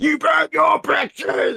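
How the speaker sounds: put-on very high, rough near-shouting rant. Retelling how Joel went red and yelled: imitating Joel yelling. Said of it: "yelling at me".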